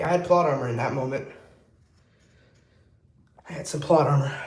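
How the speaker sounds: out of breath, winded voice. Chatting while finishing up a tattoo, out of breath. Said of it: "why am I out of breath?".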